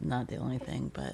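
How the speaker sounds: soft, low-volume trailing speech, muffled as into pillow. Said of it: "Can you talk up".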